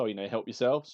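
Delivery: normal talking voice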